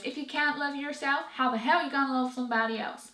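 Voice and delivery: bad, clumsy, fake American accent. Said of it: "That was the worst American accent".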